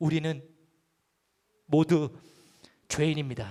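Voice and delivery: heartfelt, emotional, on the edge of tears. Asking listeners to watch him while he confesses with feeling, emotional, as if near tears. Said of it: "감정을 실어서 막 눈물이 날 것 같은".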